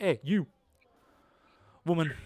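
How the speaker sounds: brash, swaggering, cocky, arrogant voice. Voicing a cocky medal winner at the fair stand: cocky voice. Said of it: "And he's very cocky".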